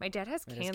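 acted dead straight deadpan delivery, no reaction. Retelling a character's blunt reply from the show: imitating a deadpan delivery. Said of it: "the deadpan of".

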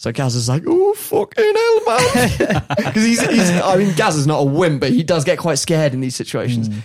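ordinary delivery

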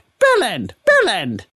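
high, loud, repeated creature voice. Voicing a Kenku repeating its partner's name: Kenku voice. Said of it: "As the Kenku's like".

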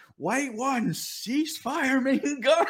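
very high, very slow, drawn-out scream. Retelling how the battalion commander was heard over the radio: imitating a commander screaming.

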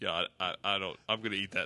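imitated sheepishness. Retelling how someone turned down a bag for food, retelling a sheepish reply. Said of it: "And Trey like sheepishly goes".

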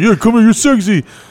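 put-on, high, hollered yell. Retelling calling out to some girls: imitating own past yell. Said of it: "when I yelled at those girls".

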